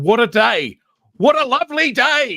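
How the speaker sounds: put-on loud, shrill, high, booming Australian accent. Describing a film battle charge, quoting a voice heard, in Australian accent. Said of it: "you just hear this Australian voice going".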